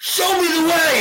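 very high, full-lunged, drawn-out scream. Retelling a prayer shouted across the ocean: retelling own scream. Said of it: "And I screamed it".

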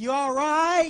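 very loud, high-pitched yell, hollered out. Retelling an old man calling to his wife in a restroom: imitating someone yelling. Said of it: "yelling into his wife".

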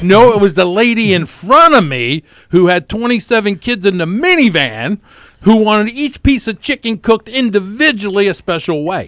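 irritated ranting voice. Recounting a drive-through wait to the others, sounding angry. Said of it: "you sound angry".

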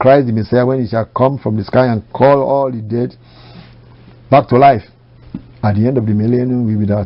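ordinary talk, nothing marked

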